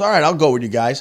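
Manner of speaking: usual speaking voice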